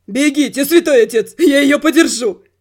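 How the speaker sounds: loud shout through laughter, with tears in it. Holding a woman by the waist, a man calls to the priest, shouting through laughter and tears. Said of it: "сквозь смех и слезы прокричал".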